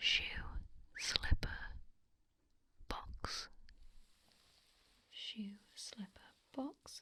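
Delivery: whispered words. Whispering test words into the other ear for a hearing check: whispering. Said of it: "I'll whisper into this one".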